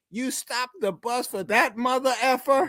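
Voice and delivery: mock, very high, shrill, yelled-out scream. Retelling a teammate screaming about stopping the bus. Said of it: "Cliff Johnson screams out".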